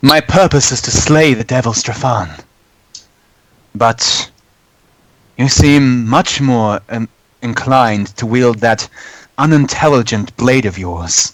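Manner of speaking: resentful, sour, bitter tone. A voice in a player's mind speaks once the blade is pulled out, in a bitter voice. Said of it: "bitter voice in your mind say".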